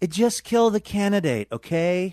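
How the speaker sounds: slow, slightly high, drawn-out voice. Joking about a TV plot, attempting a Bill Maher impression. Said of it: "That's my attempt at a Bill Maher impression".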